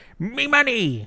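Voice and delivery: very high-pitched cartoon character voice. Showing how they get into character: Mister Krabs voice. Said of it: "the way I get into character is I say".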